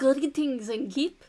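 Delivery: put-on French accent. Storyteller voicing a character who was given a French accent before. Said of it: "I gave him a French accent last time".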